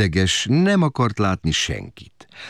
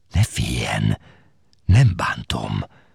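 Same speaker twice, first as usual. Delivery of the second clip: threatening, menacing whisper, much lower; 10 semitones lower than usual. A man hiding under the bed speaks to a screaming woman: threatening whisper. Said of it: "suttogta fenyegetően a férfi".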